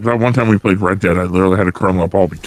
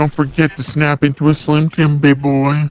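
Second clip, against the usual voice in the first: creepy, gravelly put-on voice, pitched up; 8 semitones higher than usual. Joking around with others: creepy gravelly put-on voice. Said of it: "Why am I so creepy right now?".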